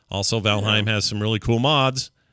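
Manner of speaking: ordinary talk, nothing marked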